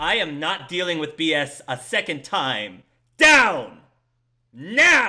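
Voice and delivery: booming, very loud, very slow, enraged voice. She goes right up to the two people on her ship, authoritative, furious voice. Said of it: "very authoritative and furious voice".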